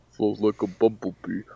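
put-on Italian-American tough-guy accent. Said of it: "put on that, uh, Stallone accent".

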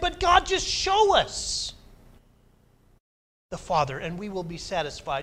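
earnest, begging, pleading tone. Retelling Philip's request to Jesus to be shown the Father: imitating Philip pleading. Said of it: "you can hear it in his tone of voice".

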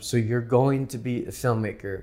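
ordinary talk, nothing marked

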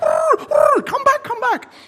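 whistle blast then very high, loud shouted calls. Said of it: "she goes".

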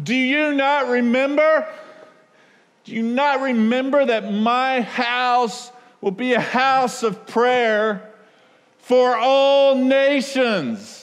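shrill, impassioned cry. Speaker retelling Jesus yelling out while overturning tables: retelling a yell. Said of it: "Jesus yells out".

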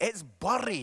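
Scottish pronunciation. Speaker teaching a church congregation to say a word the Scottish way: Scottish pronunciation. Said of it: "say it in the Scottish way".

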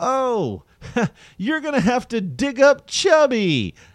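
very high, loud, teasing mocking tone. Retelling a joke about digging up the dead dog: imitating own mocking joke. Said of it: "it was more in mock".

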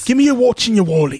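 very high, loud, put-on London voice. Acting out a mugger in london holding a knife: imitating a london mugger.

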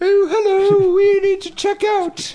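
very high, posh, queenly fake woman's voice. Retelling how Ray called the front desk to check out: fake woman's voice. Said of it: "I like how it kind of sounds like the queen".

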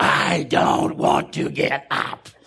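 loud, possessed demon voice. Retelling the wife's reply to a nurse who asked her to sit up, in a Linda Blair voice. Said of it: "best Linda Blair voice".

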